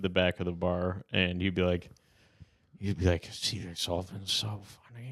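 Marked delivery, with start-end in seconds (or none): 3.3-5.1 quiet voice, getting quieter. Retelling how the bar owner talked at the bar: imitating Jim talking quietly. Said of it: "he would talk so quiet".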